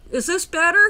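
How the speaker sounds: very loud yelling. Testing a microphone after fixing the audio level: yelling into the mic. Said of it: "I'm yelling into my mic now".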